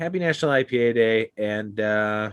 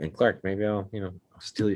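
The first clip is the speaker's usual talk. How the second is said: secretive, very low, hushed aside; 3 semitones lower, 5 dB quieter than usual. Offering a co-host a secret bottle so another can't hear: talking very low. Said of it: "Brandon can't hear this because I'm talking so low".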